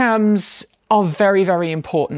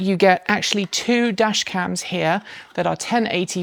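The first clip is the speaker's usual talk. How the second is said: normal talking voice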